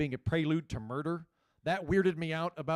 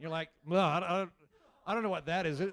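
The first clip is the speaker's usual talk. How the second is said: plain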